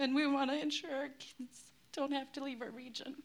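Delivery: on the verge of crying. Speaking about the community's lost language and connection, on the verge of crying. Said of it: "I'm gonna cry".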